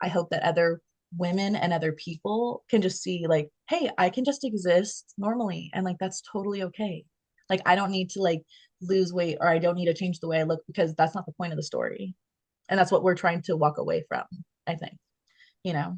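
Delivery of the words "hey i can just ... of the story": usual speaking voice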